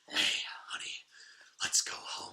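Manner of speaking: put-on breathless, grunting, out-of-breath character voice. Imitating a character discussed with a co-host, breathless grunting impression. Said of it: "seems like he's out of breath, and he smokes like 3 packs a day".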